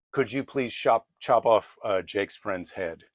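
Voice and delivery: ordinary talk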